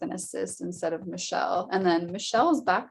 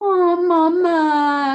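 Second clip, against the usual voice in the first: shrill, needy, very high and loud whine; 11 semitones higher, 12 dB louder than usual. Speaker mimicking a person who constantly fusses over you, imitating a whiny voice. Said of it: "giving you the whiny voice".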